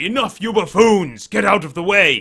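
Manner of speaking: very loud, high-pitched, booming yell. Narrating a game scene, the speaker voices someone outside in a booming voice. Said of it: "you hear this booming voice from outside that says".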